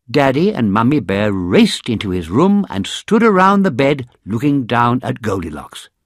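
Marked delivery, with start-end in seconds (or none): none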